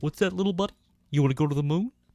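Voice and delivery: high, loud puppet voice. Comparing muppet voices, showing off an Ernie voice.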